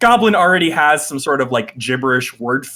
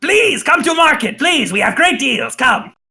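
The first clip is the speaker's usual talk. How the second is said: very high, badly done Common accent; 11 semitones higher than usual. Retelling a market vendor calling out to both listeners, in the worst accented Common. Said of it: "in like the worst accented common".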